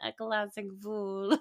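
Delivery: nasally voice pushed through the nose. Quoting a line from Love Actually: nasal Alan Rickman voice. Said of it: "his, like, nasally voice".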